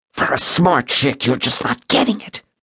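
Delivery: menacing hissed words. Narrating fiction, Callan grabs a woman's chin and speaks to her, hissing. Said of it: "he hissed".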